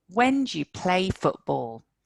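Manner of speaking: words when, play and football stressed. English sentence stress lesson on information words, stress on when, play, football. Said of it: "When and play football are the words carrying in the information. These are the words that are stressed".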